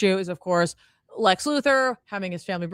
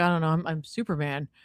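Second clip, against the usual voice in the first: put-on mumble, quieter and slower; 3 semitones lower, 5 dB quieter than usual. Retelling Superman's answer when asked how he did it, mumbling Superman. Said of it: "Superman just mumbles like".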